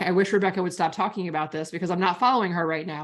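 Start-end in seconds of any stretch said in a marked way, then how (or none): none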